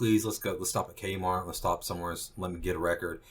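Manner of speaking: plain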